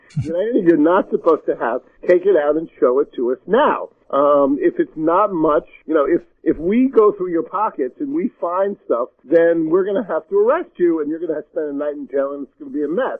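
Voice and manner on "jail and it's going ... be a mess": ordinary talk, nothing marked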